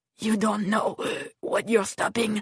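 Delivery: speaking with a wheeze. A man, his chain torn off in a struggle, warns the woman, wheezing. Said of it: "the man wheezed".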